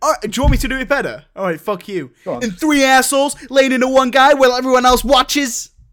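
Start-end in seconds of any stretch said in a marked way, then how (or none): 2.3-5.7 bad put-on American accent, loud and pitched up. Asked whether to do the voice better, trying again: bad American accent. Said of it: "You've not got a very good American impression".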